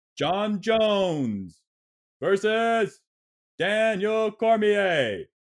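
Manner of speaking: very loud drawn-out announcing. Demonstrating how they read off every single bout before the fights; very loud, slow announcing. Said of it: "they read off like very loudly and very slowly".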